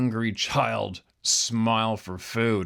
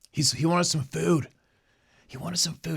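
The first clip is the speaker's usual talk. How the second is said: put-on whisper, higher; 7 semitones higher than usual. Retelling a phone call where the caller whispered about an intruder: imitating someone whispering. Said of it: "she's whispering like".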